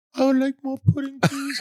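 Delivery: put-on pitched way up, very high little-kid voice. Doing a Tiny Tim voice after being asked for it: Tiny Tim voice. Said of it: "your Tiny Tim".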